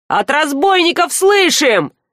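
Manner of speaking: indignant shout. Reading a story, the narrator voices Zhar yelling back over a fence: indignant shout. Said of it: "возмущенно заорал Жар".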